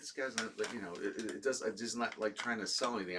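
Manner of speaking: soft, quiet under-the-breath aside.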